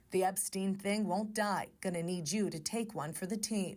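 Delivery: ordinary delivery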